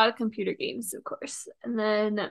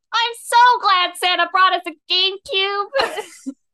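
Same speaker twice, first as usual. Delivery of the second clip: very high, drawn-out, shouted yell; 10 semitones higher, 9 dB louder than usual. Retelling a Christmas morning moment, imitating Caleb yelling. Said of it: "Caleb just yells out".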